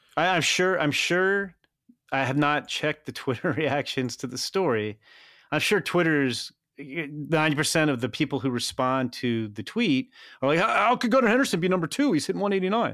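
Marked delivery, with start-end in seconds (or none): 10.6-13.0 huffy, indignant voice, pitched up. Speaker mimicking Twitter replies to a story, mock-indignant baseball fan voice. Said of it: "I love your indignant baseball fan voice".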